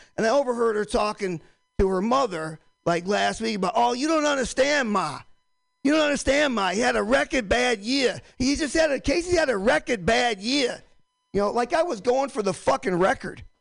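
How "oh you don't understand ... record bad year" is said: put-on heavy, serious, thick Boston accent, laid on. Retelling his wife talking to her mother, in a thick Boston accent. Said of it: "my wife has a serious Boston accent".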